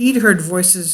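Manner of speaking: ordinary delivery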